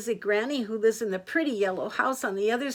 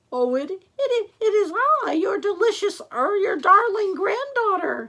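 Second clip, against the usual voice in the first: very high, shrill, loud fake voice, stumbling; 9 semitones higher, 5 dB louder than usual. Reading a fairy tale, the wolf answers Granny at her door, wolf's high fake voice. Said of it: "said the wolf in a high voice".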